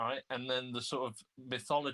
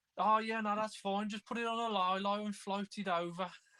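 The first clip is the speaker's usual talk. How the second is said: very high, put-on Birmingham accent; 9 semitones higher than usual. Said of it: "throwing out the, the Brummie accent".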